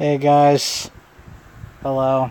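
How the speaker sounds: sounding very tired. Opening greeting to listeners, in a tired voice. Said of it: "I sound very tired".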